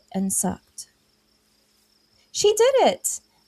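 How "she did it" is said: tiny voice squealing, very high and excited. An unseen small voice reacts as a woman tastes from a cauldron: small voice squealing excitedly. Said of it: "a small voice squealed with clear excitement".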